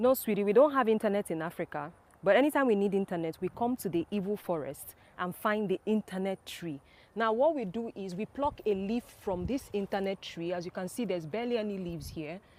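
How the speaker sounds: plain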